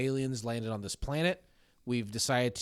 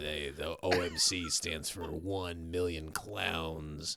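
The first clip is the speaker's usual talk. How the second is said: very deep, very low, very slow voice; 7 semitones lower, 5 dB quieter than usual. Retelling what the other speaker's brother said about a band name: imitating the brother's voice. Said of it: "this is your brother's voice".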